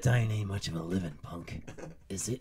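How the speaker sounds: deep, hushed, quiet sexy movie-style voice. Going off into Clint Eastwood for a second to quote a line, in a Clint Eastwood voice. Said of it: "I just went off Clint Eastwood for a second".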